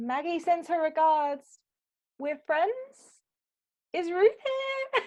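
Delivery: amplified-sounding booming call. A tabletop character uses magic to boom their voice, magically boomed voice. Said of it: "thaumaturgy to like boom my voice".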